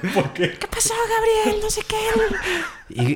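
very high, sing-song, swooping put-on voice. Retelling how Tete talked to baby brother Gabriel, Chabelo voice. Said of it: "le empezaba a hablar así con voz de Chabelo".

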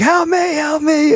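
very high, squealing, screaming cry. Retelling how the man they beat up cried out, imitating someone screaming for help. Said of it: "he's screaming".

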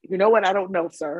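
ordinary talk, nothing marked

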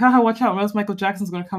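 ordinary delivery

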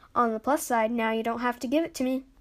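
ordinary delivery

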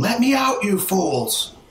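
high, mild little shriek. Voicing a trapped woman in a game scene: screaming. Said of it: "she starts screaming".

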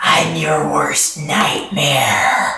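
hissing alien creature voice. After Trixie's sting, Zinni, now a big gray alien head, speaks: hissing, as Zinni. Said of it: "And hisses".

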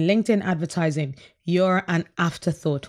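ordinary delivery

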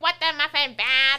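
very loud streamer-style yell at full blast. Showing friends the funny way Quackity always says it to Bad, do a Quackity impression. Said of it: "He's always like".

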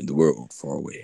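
deep narrating voice. Wishing someone would ask them to narrate an album, the speaker tries a narrator voice. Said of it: "like talking as like a narrator".

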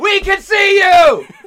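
shrill, high, stretched-out yell at full volume. Shouting playfully at the camera: yelling. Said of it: "I'm yelling for no good reason!".

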